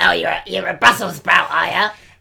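rough, creaky, worn-edged raspy voice. Retelling what Kenny Baker said to a young Scout: imitating Kenny Baker. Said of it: "he doesn't talk like that".

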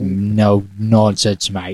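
slow, low English accent, male voice.

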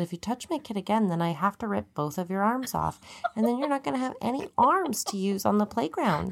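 sweetly spoken menace with sugary, put-on niceness. Parent retelling warning a child who touched their kid, fake-nice smiling threat. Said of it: "And I say it really nice, like, smiling while I say it".

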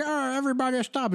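put-on high, old-timey throwback voice like old newsreel. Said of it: "that was my throwback voice for that".

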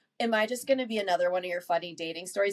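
plain

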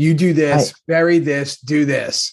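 mock barking, very slow and forceful. Retelling how Jack barked orders at everybody: imitating Jack barking orders. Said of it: "barking out orders".

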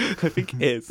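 talking while laughing through the words.

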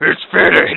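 mock voice as if through a respirator mask. Imitating someone who straps on a respirator: mock voice as if wearing a respirator. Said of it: "You say it like that?".

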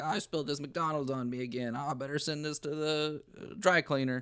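high-pitched animatronic figure voice. Acting out the animatronics for another speaker: Bill Clinton voice. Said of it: "and Bill Clinton's like".

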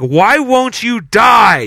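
acted, really loud, high screaming, die drawn out. Telling how neighbors heard a man in Australia, imitating a man yelling. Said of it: "he was saying".

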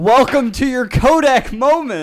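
very loud, very high, drawn-out taunting yell. Watching dunk clips, quoting a player's taunt to the one he dunked on, retelling a yell. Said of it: "I'm yelling".

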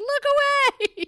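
very high, loud, shrieked yell. Retelling a favorite comedy movie scene: imitating Melissa McCarthy yelling. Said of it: "and she yells".

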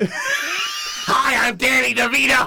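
high, loud shouted voice. Joking about a movie called Braidless: Danny DeVito impression. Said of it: "You sound more like Gilbert Gottfried".

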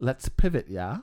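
half-sure attempt at a put-on British accent. Suggesting a change of topic to another speaker: British accent. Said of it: "was that your British accent?".

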